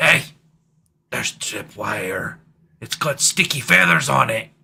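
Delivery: hushed stage whisper. Player's character calling back up the stairs, half-whispering. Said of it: "I'll whisper that back up the stairs".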